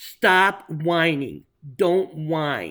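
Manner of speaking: slow, loud, stern, firm voice.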